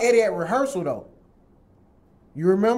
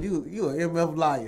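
ordinary talk

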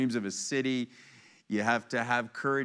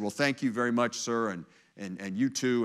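assured, commanding voice of authority. Retelling a joke about a new boss on a fake phone call: imitating an authoritative voice. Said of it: "in an authoritative voice".

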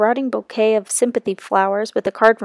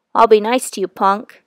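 ordinary delivery

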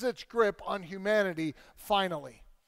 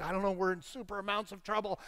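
put-on anxious, nervous back-and-forth bickering; 5 dB quieter than usual. Retelling kids arguing in the car: imitating nervous arguing kids. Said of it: "And they're nervous".

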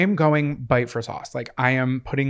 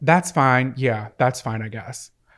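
put-on reluctant sighing delivery. Retelling the cashier's reply after sighing: imitating a sighing cashier. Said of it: "she sighed".

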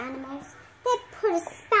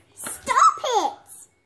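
very high, shrill, squeaky, small voice, raised; 10 semitones higher, 6 dB louder than usual. Reading a story, a character cries out to the shouting animals, squealy voice. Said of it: "in a squealy voice".

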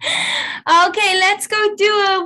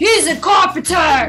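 big-voiced, drill-like echoing delivery. Repeating a practice sentence after being asked for a big voice: big loud voice. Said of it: "In a big voice".

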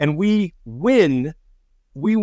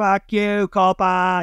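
put-on drunken yelling, higher; 5 semitones higher than usual. Retelling how a drunk crowd greeted them on stage: imitating drunks yelling. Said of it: "yelling at us".

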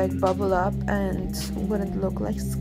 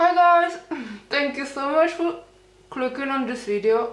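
talking with fake teeth on the lips; 6 semitones higher, 4 dB louder than usual. Greeting viewers while wearing fake teeth on the lips: talking with fake teeth on lips. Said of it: "I'm sorry for talking like that, but this kinda teeth on my lips".

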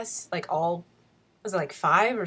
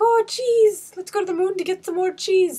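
terrible British accent, very high and loud; 13 semitones higher, 8 dB louder than usual. Quoting a line after naming Wallace and Gromit: bad Wallace and Gromit British accent. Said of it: "like, Wallace and Gromity".

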